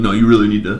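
put-on stern, serious voice. Imitating their roommate telling them what to do, in a mock-stern voice. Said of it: "got just a stern voice".

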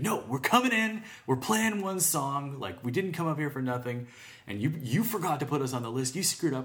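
put-on high, pushy, aggressive, insistent tone. Retelling what a group told the bouncers after being left off the list, acting out an aggressive demand. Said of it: "they like almost threatened to burn the place down".

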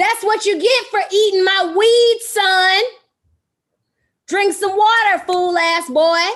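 high, very loud scolding yell. Scolding the dog that ate the weed, yelling at the dog. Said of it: "She's yelling at the dog again".

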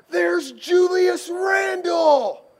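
sudden, loud shouted cry, pitched very high. Retelling a drive down Sunset Boulevard with friends, imitating Andrew's sudden shout. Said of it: "Andrew just shouts out this cry".

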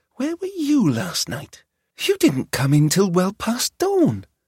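whispering. Narrator reads one character whispering a question to another, whispered. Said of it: "Tatiana whispered to Dasha".

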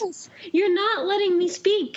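fake shouting. Arguing over anime in a put-on quarrel: mock yelling. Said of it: "Why are we yelling?".

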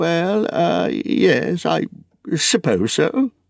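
hesitant stuttering. A narrator reads a reply to Gandalf's question about the ring, stammering. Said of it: "stammered Bilbo".

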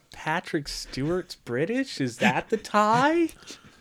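high, slow, baffled, mocking tone. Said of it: "I was like".

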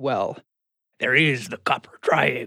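put-on sort-of sailor slant, a touch of old sea dog. Retelling what a man said on a phone call, with a sort of sailor slant. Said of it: "with a sort of sailor slant in his voice said".

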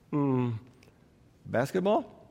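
soft, tentative, unsure tone.

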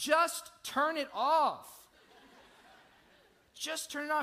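high, loud, slow, exasperated pleading tone.

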